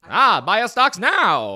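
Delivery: Mid-Atlantic accent, salesman-style delivery. Trying out a voice for an American capitalist game, Mid-Atlantic accent. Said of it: "the Mid-Atlantic dialect".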